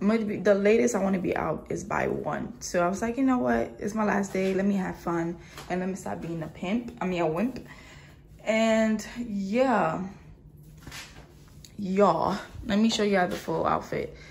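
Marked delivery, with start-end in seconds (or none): none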